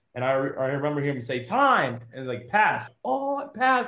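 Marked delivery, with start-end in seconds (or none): 3.1-3.9 mock thrilled shriek, very high pitched. Retelling hearing you passed at the end of a timed run: retelling excited screaming. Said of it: "I'm like screaming at myself".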